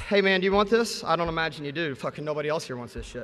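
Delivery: dejected, defeated, deflated voice. Retelling a door-to-door pitch after dozens of no's: imitating a defeated sales pitch. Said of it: "Your pitch becomes like".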